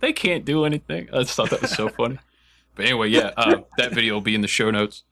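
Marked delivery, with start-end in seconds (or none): 0.0-1.1 high, put-on elderly woman's voice. Retelling an old lady's reply in a clip: imitating an old lady. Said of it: "this old lady's like".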